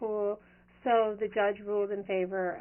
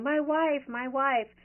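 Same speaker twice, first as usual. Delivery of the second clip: put-on slow, drawn-out, belligerent drunken yelling; 4 semitones higher, 4 dB louder than usual. Retelling a drunk man being put in a police car, retelling a drunk man's yell. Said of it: "and he's yelling".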